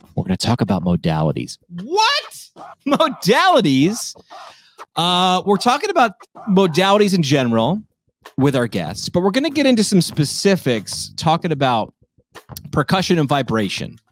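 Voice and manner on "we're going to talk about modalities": playful, joking, conspiratorial stage whisper. Saying a word as if it were a bad word: joking half-whisper. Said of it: "I'm gonna whisper it".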